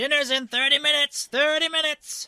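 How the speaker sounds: very high, very loud hollering. Voicing Patches walking through the hallway announcing dinner: character yelling. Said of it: "and he yells".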